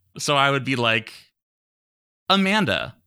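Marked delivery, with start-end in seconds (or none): 2.3-2.9 every word carefully over-enunciated, radio announcer style. Retelling how he spoke to a smart speaker: over-enunciated radio-commercial voice. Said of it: "You sound like a radio commercial".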